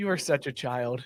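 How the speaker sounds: imitated flat deadpan delivery. Quoting what his wife said to him, imitating her deadpan.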